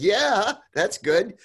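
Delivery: high, loud, mock cheery agreeable tone. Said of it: "I said".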